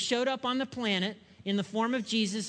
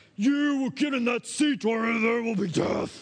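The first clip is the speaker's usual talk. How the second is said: screamed, growling grizzly bear voice; 4 dB louder than usual. Retelling yelling at a daughter who refused to buckle in, screaming grizzly bear voice. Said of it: "I screamed in my grizzly bear voice".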